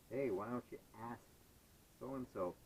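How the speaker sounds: usual speaking voice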